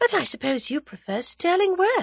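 demure, coy remark. Answering her companion's question, demurely. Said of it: "said Tuppence demurely".

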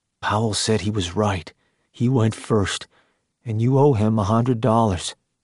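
ordinary delivery

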